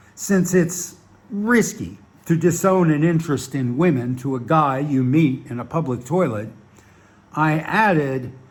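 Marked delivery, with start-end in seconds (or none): none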